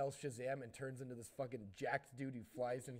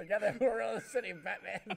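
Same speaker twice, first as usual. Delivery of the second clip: booming, high-pitched put-on character voice, belted loud; 8 semitones higher, 10 dB louder than usual. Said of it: "Why does he turn into Willem Dafoe?".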